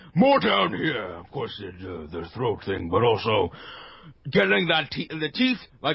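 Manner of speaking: jaw jutted out, speech slightly slurred. Explaining orc voices while showing it: jaw jutted out, slightly slurred. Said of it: "my words are a little slurred".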